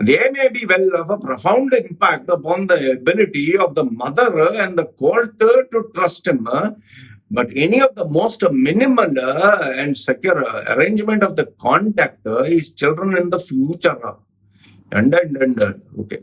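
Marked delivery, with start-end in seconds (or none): 0.0-14.1 Malabar-style Malayalam-accented English. Reading a judge's words from a court judgment in Malabari-style accented English. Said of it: "If you were to say it in Malbari style".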